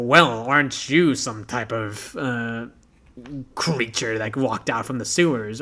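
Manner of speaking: sarcastic, snarky, mocking older man voice. Showing character voice tones, as a snarky older guy: snarky older man voice. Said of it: "if it's kind of a snarky older guy, it's like".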